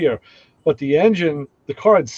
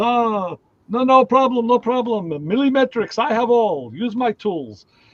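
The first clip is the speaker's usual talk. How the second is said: strong, slow, high put-on Greek American accent; 7 semitones higher than usual. Retelling what a greek man said when offering his tools, greek american accent. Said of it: "he had a very, you know, uh, Greek American accent".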